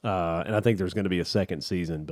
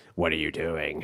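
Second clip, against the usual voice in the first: low, menacing, sinister horror-movie villain voice; 4 semitones lower, 3 dB quieter than usual. Describing a deep voice as a movie villain calling someone: movie villain phone-call voice. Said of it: "every movie villain that calls somebody on the phone".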